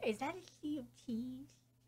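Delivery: very soft, hushed, under-the-breath quiet voice. Looking at a drawing, the speaker asks quietly. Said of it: "(quietly, about Amy’s drawing)".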